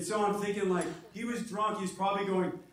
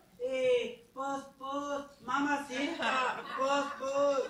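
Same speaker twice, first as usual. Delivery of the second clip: put-on Spanish accent, higher; 5 semitones higher than usual. Speaker doing a series of impressions, now a Spanish fly. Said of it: "My impersonation of a Spanish fly".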